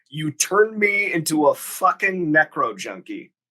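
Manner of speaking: mock heated, angry tone, half-yelled. Recapping a scene where a character yells at another, retelling the yell. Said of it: "he yells the line".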